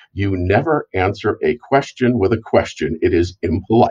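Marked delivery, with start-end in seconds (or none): none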